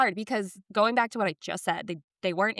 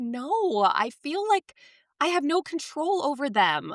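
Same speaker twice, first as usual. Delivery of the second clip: mock teary, pitched-up, close to tears; 7 semitones higher than usual. A mother retells what she told him when he hugged her, retelling tearful words. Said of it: "my eyes started to water".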